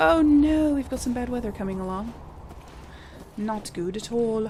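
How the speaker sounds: bad, inaccurate, put-on British accent. Narrating a build for subscribers, in a fake British accent. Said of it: "I keep making fake British accents".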